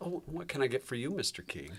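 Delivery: sweet, charming, flirty voice. Acting out a waitress who touches a customer: imitating a flirting waitress.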